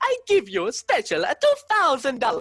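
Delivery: sing-song put-on Italian accent. Recalling an early show, speaker quotes their improvised line: put-on Italian accent. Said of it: "did my own Italian uh, voice where I was like".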